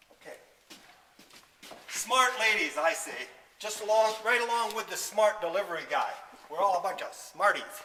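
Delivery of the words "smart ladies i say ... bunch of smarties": loud, raised sarcastic voice. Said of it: "I apologize if I'm using sarcasm a little".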